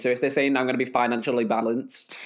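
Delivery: ordinary talk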